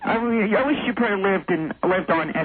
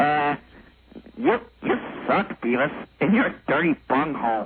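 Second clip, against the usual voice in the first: exaggerated, hammed-up put-on cartoon voice; 4 semitones lower than usual. Doing cartoon impressions for someone: Butthead voice. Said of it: "And here's my Butthead voice".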